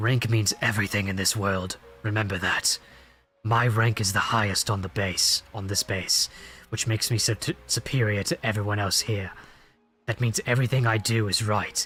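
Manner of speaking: very low, deep, gruff naval officer voice. Voicing a naval captain character, making his voice a little more gruff. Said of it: "So I'm trying to make his voice a little more gruff".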